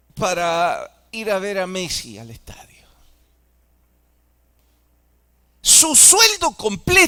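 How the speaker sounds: swooping sarcastic tone, frustrated and slightly angry. Addressing an audience about their own country, sarcastic and frustrated. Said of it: "lo digo con sarcasmo, con frustración".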